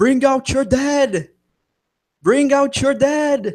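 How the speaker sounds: very high, shrill scream at the top of the lungs. Ending the game as [name] rings a bell: [name] screaming at top of lungs. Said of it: "you can hear [name] screaming at the top of his lungs".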